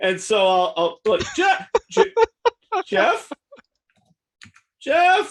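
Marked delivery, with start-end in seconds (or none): 1.4-5.3 screaming, much higher, slower. Player's character calling to a companion to get his attention, screaming a name.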